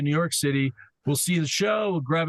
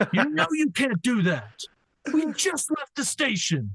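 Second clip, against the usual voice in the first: mock scream, pitched higher; 9 semitones higher than usual. Retelling how the bus driver told off a passenger: imitating someone screaming. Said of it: "the driver screamed out".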